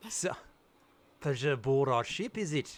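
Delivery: put-on accent drifting toward Australian. Voicing Yorgos greeting a player aboard the ship: accent drifting Australian. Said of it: "it's more Australian".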